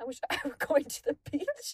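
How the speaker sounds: sad, wistful voice. Retelling what Sam said after Mike's line, imitating Sam's saddest voice. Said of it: "in the saddest voice".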